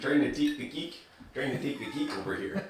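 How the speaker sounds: soft, put-on Minnesota accent. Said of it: "Minnesota accent".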